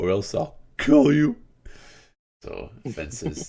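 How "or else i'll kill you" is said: very high, loud, cracking voice. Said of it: "His voice is cracking a lot".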